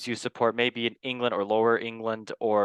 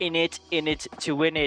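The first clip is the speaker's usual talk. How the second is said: gen z style speech; 6 semitones higher than usual. Opening the show with a catchphrase: put-on Gen Z accent. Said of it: "That is my best Genzi accent".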